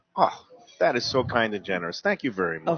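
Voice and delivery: polite, gracious, courteous, well-mannered voice. Role-playing a guest thanking the waiter for a free beer: acting a polite good guest. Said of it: "I'll pretend that we just got the beer".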